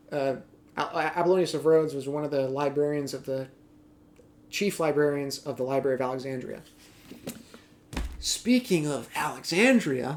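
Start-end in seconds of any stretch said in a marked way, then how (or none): 8.2-10.1 heavily sarcastic, thick sarcastic tone. Moving on while discussing books on antiquity, with a sarcastic tone. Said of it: "so much sarcasm in my voice".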